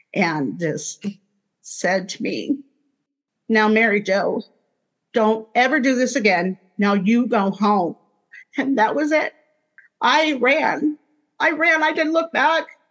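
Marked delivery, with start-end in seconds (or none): 3.5-8.0 very stern, fatherly voice. Retelling what a voice said after the near drowning: very stern, like a father. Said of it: "the voice was very stern, like a father".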